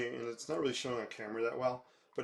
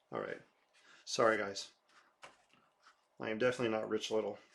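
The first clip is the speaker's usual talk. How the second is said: normal talking voice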